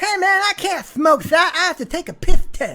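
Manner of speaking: very high cartoon-rabbit voice. Joking about a drug test, doing a Mike Tyson impression. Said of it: "my best Mike Tyson impression that sounds more like Roger Rabbit".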